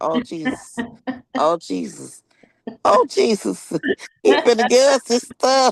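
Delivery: slow, tearful crying full of dread. Recalling the stepdad pulling out castor oil, acting out the childhood self: retelling crying as a kid. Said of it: "I just would start to cry".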